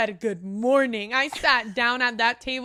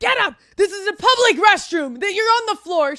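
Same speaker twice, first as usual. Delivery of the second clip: put-on scream, higher and louder; 9 semitones higher, 6 dB louder than usual. Retelling how the mother reacted on the restroom floor: imitating someone screaming. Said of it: "She's screaming at me".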